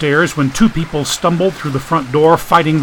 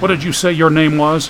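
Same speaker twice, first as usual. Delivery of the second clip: plain reading voice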